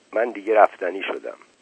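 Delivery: plain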